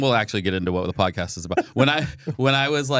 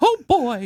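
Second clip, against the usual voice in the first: very high, put-on cartoon-style voice, pitch pushed up; 4 dB louder than usual. Speaker shows a voice they do for the kids: Mickey Mouse voice. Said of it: "Like I can do Mickey Mouse".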